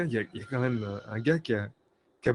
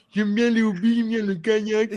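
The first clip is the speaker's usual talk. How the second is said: silly, dim-witted, dopey put-on voice, very high; 9 semitones higher, 4 dB louder than usual. Imagining HR staff reading every CV: put-on dumb voice. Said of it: "ils lisent tous les C D comme ça".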